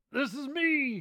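put-on cranky old-man puppet voice. In an April Fools bit claiming to be an old man, Statler and Waldorf voice. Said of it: "that's getting too close to Statler and Waldorf".

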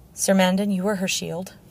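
ordinary delivery

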